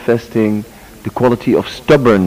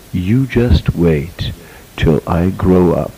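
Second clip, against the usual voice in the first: slow, very cool, dead-serious tone; 4 semitones lower than usual. Retelling words said after escaping a woman's grip, very coolly and very seriously. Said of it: "I said very coolly and very serious".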